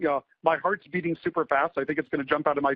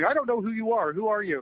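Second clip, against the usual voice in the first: flustered, increasingly agitated, high-pitched, confused; 6 semitones higher than usual. Retelling a phone call where the woman on the line keeps asking who he is: imitating someone getting agitated. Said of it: "she's getting more agitated".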